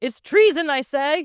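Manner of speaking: loud, high, grandly theatrical outburst. Retelling a movie scene where Grandpa objects to treason: imitating a theatrical outburst. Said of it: "Grandpa does very theatrically go".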